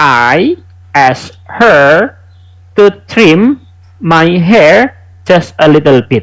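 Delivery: very slow, deliberate, careful reading. Reviewing an English listening answer with students, read slowly and carefully. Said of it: "saya bantu mereviewkan secara pelan-pelan ya".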